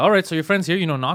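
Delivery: normal talking voice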